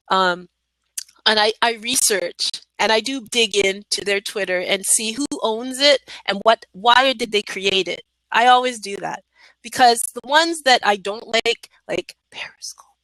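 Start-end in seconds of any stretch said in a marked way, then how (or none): 11.8-12.7 playful, joking, very hushed whisper. Naming a platform they dislike: joking whisper. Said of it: "I know I have to whisper that".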